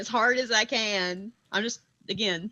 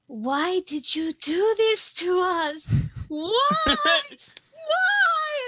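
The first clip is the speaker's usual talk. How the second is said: put-on loud, very high, drawn-out ghostly child voice; 12 semitones higher, 4 dB louder than usual. The speaker demonstrates what they plan to say, in a loud child voice. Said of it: "make my voice sound like that of a child".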